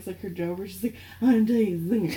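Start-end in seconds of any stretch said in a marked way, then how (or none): 1.2-2.2 put-on acted tipsy, boozy, drunk-sounding voice. Recalling a My Favorite Murder bit, imitating Karen's drunk voice. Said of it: "when Karen does her drunk voice".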